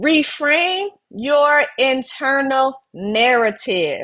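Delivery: unhurried delivery. Speaker repeats the keepsake title to the audience on purpose, said slowly. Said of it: "I said it slow for a reason".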